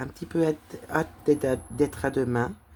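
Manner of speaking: stumbling, tripping and repeating words. Speaker addresses the audience while waiting to show something, stumbling over words. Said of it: "je bafouille".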